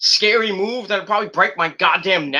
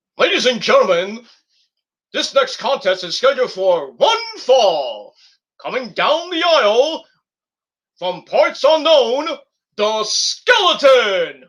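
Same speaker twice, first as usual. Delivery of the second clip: slow, drawn-out wrestling ring announcer voice; 3 semitones higher, 4 dB louder than usual. Recording an audition tape to become a ring announcer: wrestling ring announcer voice. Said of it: "This is my audition tape for".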